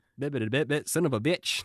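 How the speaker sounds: high-pitched cartoon voice, stuttering the words out. Recalling old cartoon clips, mimicking the cartoon pig: Porky Pig voice. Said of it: "Porky Pig being like".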